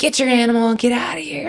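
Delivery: yelling angrily.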